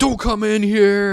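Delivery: mock yelling. Retelling a downstairs neighbor's fight with the landlord: imitating a yelling neighbor. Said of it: "downstairs neighbor is yelling at my landlord".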